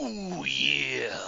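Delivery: rough, creaky, gruff wrestler voice pushed out. Asked for your best try, you give it a shot with a Macho Man impression. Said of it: "Give me your best Macho Man impression".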